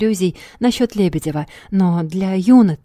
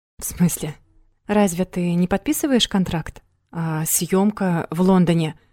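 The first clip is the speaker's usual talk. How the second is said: plain reading voice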